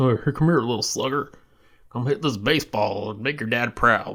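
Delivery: put-on rural Southern accent, casual male style. Picturing the baby nickname said by a redneck dude in the South: Southern redneck dude voice. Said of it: "this like redneck dude, like in the South".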